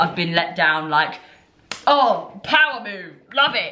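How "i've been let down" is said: ordinary talk, nothing marked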